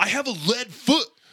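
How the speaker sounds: high-pitched, loud, indignant delivery. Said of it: "he says it all indignantly".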